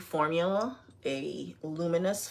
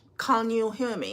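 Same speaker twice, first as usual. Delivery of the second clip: phony British accent, pitched up; 5 semitones higher than usual. Asking viewers a quick question while doing makeup, fake British accent. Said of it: "my fake British accent".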